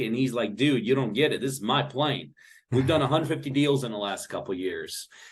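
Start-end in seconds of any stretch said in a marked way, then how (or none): none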